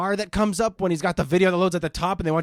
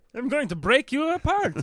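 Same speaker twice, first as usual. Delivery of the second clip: put-on, laid-on Scandinavian accent, pitched high; 8 semitones higher than usual. Joining a co-host's doctor bit, speak in a put-on Swedish-Icelandic accent. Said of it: "You're big on that Ingeborg accent".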